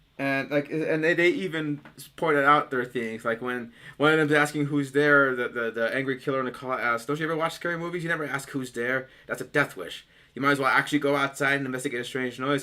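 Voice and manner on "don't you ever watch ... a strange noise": usual speaking voice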